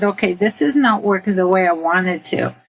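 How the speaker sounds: plain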